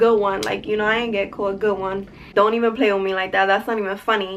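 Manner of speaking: ordinary talk, nothing marked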